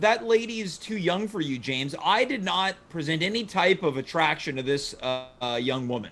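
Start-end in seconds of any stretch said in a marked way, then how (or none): none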